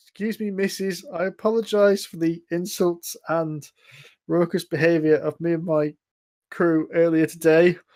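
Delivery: humble, meek, well-mannered apologetic tone. A character under a suggestion spell knocks on a door to apologize, demure, meek apology. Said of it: "knocks on the door quite demurely and goes".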